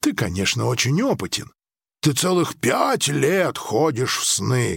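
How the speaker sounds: plain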